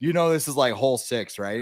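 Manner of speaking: normal talking voice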